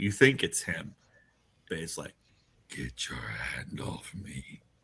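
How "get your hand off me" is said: very quiet, slow, drawn-out whisper. After he puts a hand on your shoulder, a voice answers, whispering voice. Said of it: "a voice whispers through".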